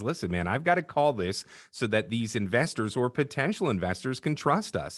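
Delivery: ordinary delivery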